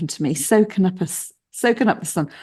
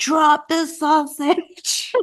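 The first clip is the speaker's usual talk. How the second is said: put-on urgent, high-pitched yelling; 8 semitones higher than usual. A parent retells yelling at their young son holding a sausage, retelling a yell. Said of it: "I'm yelling him".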